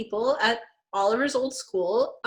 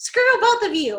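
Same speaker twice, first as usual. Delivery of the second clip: put-on tearful voice, higher pitched; 8 semitones higher, 4 dB louder than usual. Retelling Marissa's parting words before she drives off: imitating Marissa crying. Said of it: "And she drives off crying".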